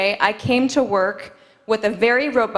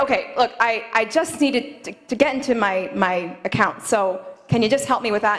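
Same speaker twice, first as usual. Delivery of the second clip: ordinary talk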